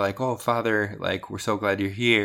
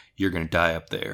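voice dropped lower; 4 semitones lower than usual. Retelling what a woman said to them, quoting her in a lower voice. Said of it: "she said it in a lower voice".

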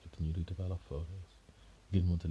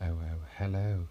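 eerie, haunting ghost voice; 4 dB louder than usual. A narrator reads a lady answering the phone, in an eerie ghostly voice. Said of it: "in an eerie voice that sounded like a ghost in a faraway room".

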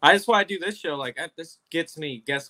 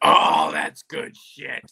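slow, raspy, big growled voice; 5 dB louder than usual. Retelling a pitch meeting and what Vince said: Vince impression. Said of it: "You sound just like him".

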